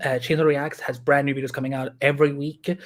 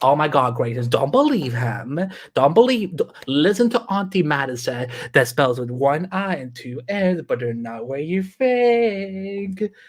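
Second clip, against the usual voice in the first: auntie character voice with a stretched-out think. Slipping into a character to speak to the Graces, in the Auntie Madison character voice. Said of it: "I can just bring out that voice so easily".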